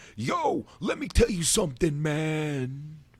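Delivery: put-on Philly voice, slow, high, drawled "man" stressed. Imitating John Cena trying to fit in while in Philly: John Cena's put-on Philly voice. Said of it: "he's in Philly and it's".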